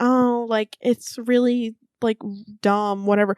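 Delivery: ordinary delivery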